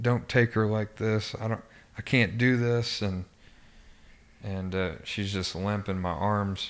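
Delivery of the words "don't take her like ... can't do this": desperate screamed pleading. A father retells screaming at god while holding her limp; retelling a desperate scream. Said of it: "I'm screaming at God".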